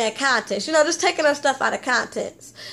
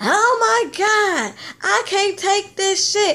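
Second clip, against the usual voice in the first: mock exasperated, high, drawn-out screaming outburst; 6 semitones higher than usual. Retelling a reality show scene where Jackie gets upset: imitating someone screaming. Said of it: "she just started screaming".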